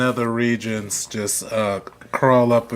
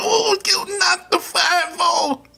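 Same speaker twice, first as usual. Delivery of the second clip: very high, slow, annoying silly little voice. Mocking the annoying little voices used in a wrestling promo. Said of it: "the annoying little voices they use".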